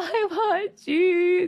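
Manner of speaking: mock very high, loud sobbing, crying whine. Acting out what he said after being told to close his mouth, imitating someone crying. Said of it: "Just crying".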